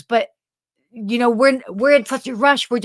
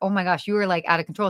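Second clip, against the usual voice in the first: amused voice, laughing through the words; 3 semitones lower, 4 dB quieter than usual. Retelling laughing at mom for greeting everyone: imitating own laughing retort. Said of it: "I was laughing at her".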